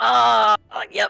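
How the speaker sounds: pained, rough voice, sounding hurt. Answering a question while stretching, sounding in pain. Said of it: "it sounded like she was, like, in pain still".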